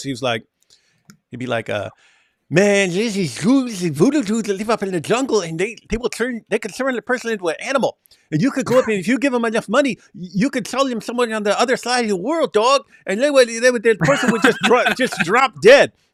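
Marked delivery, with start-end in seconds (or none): 2.5-15.9 very high voice with a speech impediment. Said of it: "he had a speech impediment where he talked like this".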